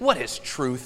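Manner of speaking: contemptuous, scornful, dismissive tone. Preaching to listeners, acting out a quoted question: quoting a scornful question. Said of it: "With some scorn in his voice".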